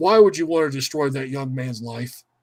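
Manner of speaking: solemn, dead-earnest, grave, very serious tone. Retelling what a man very seriously asked, in a mock-serious tone. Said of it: "Vince very seriously goes".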